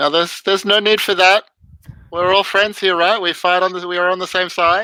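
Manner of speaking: put-on heavy village French accent. Voicing a man who is yelled at to drop his weapons, in a heavy village French accent. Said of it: "in heavily accented village French".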